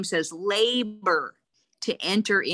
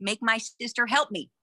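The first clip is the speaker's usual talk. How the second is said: loud, shouted, demanding voice; 3 semitones higher than usual. Retelling how Martha runs in from the kitchen to the Lord: Martha shouting. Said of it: "she shouts at the Lord".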